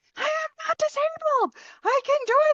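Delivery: high mock scream, yelled way up high.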